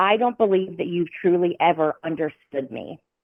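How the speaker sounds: usual speaking voice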